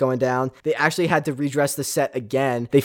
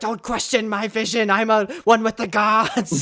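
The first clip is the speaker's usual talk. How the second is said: high-pitched, frantic, freaking-out rant; 8 semitones higher than usual. Retelling a parody scene of Red Skull: imitating Red Skull freaking out. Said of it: "the Red Skull just freaking out".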